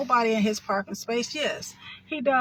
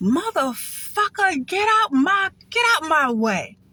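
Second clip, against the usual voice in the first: put-on scream, much higher and slower; 6 semitones higher, 6 dB louder than usual. Recounting how she lost it at the man parked behind her, retelling her screaming. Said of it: "So I started screaming".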